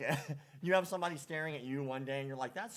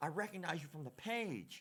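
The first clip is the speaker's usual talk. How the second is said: mock drunk man voice, higher and quieter; 3 semitones higher, 6 dB quieter than usual. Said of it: "He was quite obviously drunk".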